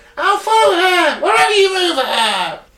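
very high, shrill, trembling furious scream. Reading a story aloud, voicing a man who screams out, high-pitched and trembling with rage. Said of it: "in a high-pitched voice, fairly trembling with rage, he screamed out".

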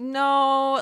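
passive-aggressive "no". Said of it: "like, passive aggressive".

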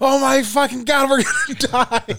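put-on very high, shrill, shrieking panicked scream. Retelling a show scene where a firefighter panics, imitating a shrill panicked scream. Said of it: "This shrill that he was on".

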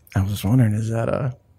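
low, creepy, murmured under-the-breath voice.

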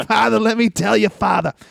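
put-on Boston accent, put on. Recalling the hokey Dungeon of Doom vignettes, mimicking one: Boston accent. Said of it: "Boston accent".

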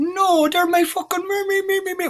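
very high, slow, squeaky, silly little voice. Retelling a man's answer about his shoes: little silly voice. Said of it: "like little silly voice on him".

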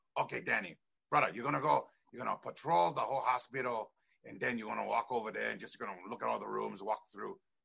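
put-on pidgin English accent. Retelling how a man told danny to patrol the hospital, in pidgin english. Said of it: "they talk pidgin English".

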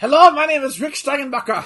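cross, angry mad-scientist voice with German accent. Hosts joking about a wrestler's name, doing it as an angry German scientist voice. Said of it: "Sounds like an angry German scientist".

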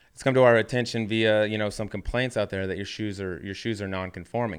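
ordinary delivery

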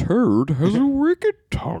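very high, swooping, hammed-up Shakespearean delivery. Retelling a joke impression from X-Men: Ian McKellen impression as Magneto. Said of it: "do an Ian McKellen joke, like, or impression".

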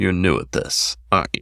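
hushed, murmured sotto voce undertone under the breath. Narrator reading the druggist's question to Hamilton across the counter, sotto voce. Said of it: "sotto voce".

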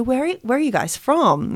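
heavy put-on Bronx accent. Retelling an Uber driver asking the speaker and a friend, thick Bronx accent. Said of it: "he's got a really thick Bronx accent".

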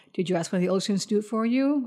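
mock calm, soft, unruffled, even-keeled voice. Recounting how Dumbledore questions Harry in the book, imitating a calm Dumbledore. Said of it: "Dumbledore said calmly".

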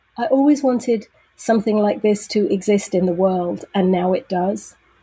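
plain

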